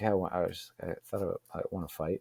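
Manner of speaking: muttered under the breath. Retelling a blurted answer about wanting to fight: imitating own mumble under breath. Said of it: "I just kinda blurted, uh, under my breath".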